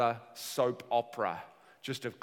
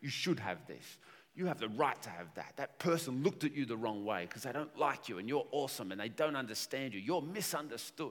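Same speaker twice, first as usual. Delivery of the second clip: smug, arrogant, prideful, self-flattering inner voice; 5 dB quieter than usual. Acting out the overly positive voice inside your head: put-on arrogant inner voice. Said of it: "It's arrogant".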